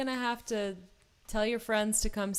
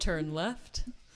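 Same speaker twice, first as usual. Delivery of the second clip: lower-pitched put-on robotic navigation voice; 4 semitones lower than usual. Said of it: "imitated a robotic voice".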